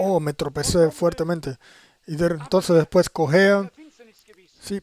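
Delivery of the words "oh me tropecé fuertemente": plain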